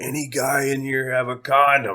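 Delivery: mock tipsy, high, mild calling-out voice. Telling a bar story, the speaker retells their own drunken yell. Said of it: "I stood up on the bar stool and I just yelled".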